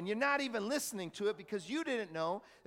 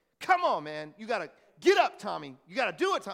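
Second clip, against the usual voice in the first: harsh, hard, unforgiving, raised voice; 7 dB louder than usual. Showing friends how his internal voice talks to him, harsh inner voice. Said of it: "it's harsh".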